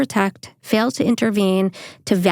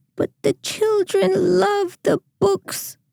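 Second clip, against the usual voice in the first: put-on very high, tiny elderly nun voice, pleading tone; 11 semitones higher than usual. Retelling a scene from Elf, doing the elderly nun's line in a little elderly nun voice. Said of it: "I just nailed that impersonation".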